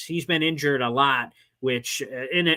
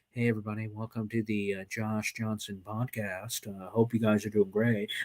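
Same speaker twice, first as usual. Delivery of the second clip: very low, hushed, quiet, sterile monotone drone; 7 semitones lower, 9 dB quieter than usual. Retelling an old guy seen hosting a podcast on tv, in a monotone old-guy voice. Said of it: "so sterile, so monotone".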